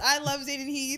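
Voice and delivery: loud and proud. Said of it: "I will say it loud and proud".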